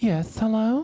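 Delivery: put-on woman's voice. Reminding the other speaker of the prank call: imitating a woman's voice. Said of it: "You do the woman's voice you did".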